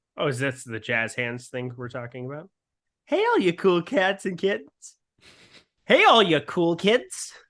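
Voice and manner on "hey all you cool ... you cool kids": corny, cheesy voice, pitched up and loud. Greeting cool guys at a high school reunion: imitating a corny person. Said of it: "Eric is trying to do an impression of a corny person".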